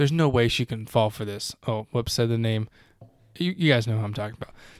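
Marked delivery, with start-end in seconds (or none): none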